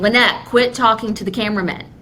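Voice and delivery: normal talking voice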